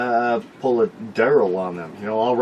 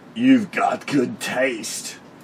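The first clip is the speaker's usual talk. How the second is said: put-on raspy, gritty, smoke-worn voice with Latin accent. Retelling what the salesman who ordered the bow said; gritty smoker latin voice. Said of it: "said in a gritty smoker Latin voice".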